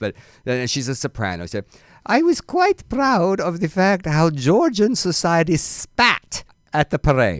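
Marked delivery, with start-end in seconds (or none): 2.1-7.4 high put-on European accent with Spanish flavour. The speaker reads a soprano's quote aloud: European accent, Spanish influence. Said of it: "I'm going to try European, but there will be some Spanish influence".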